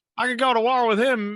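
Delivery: put-on loud, high-pitched Southern accent. Imitating an announcer praising a quarterback, Southern accent. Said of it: "I don't know why he's a Southern accent now".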